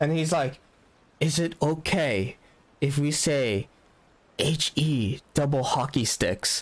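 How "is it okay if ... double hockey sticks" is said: put-on whispered voice. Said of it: "whispers to me".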